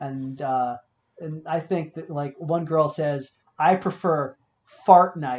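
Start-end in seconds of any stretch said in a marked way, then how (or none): 3.6-5.4 mock dry, completely deadpan, straight-faced delivery. Retelling what one girl said about games: imitating a deadpan remark. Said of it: "she says it so completely deadpan".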